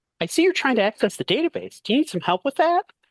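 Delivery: squeaky, very high-pitched cartoon helper character voice. Playing a helper character in a recorded bit: high character voice. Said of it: "We'll see how high my voice goes".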